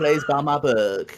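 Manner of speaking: put-on Valley Girl accent, English. Discussing a failed game, doing a J.K. Rowling impression. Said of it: "that's how J.K. Rowling speaks".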